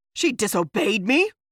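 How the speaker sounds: startled, loud bellow of disbelief. A man, told that Sarsha has gone to the outcast lands, bellows in surprise. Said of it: "he bellowed, seemingly surprised".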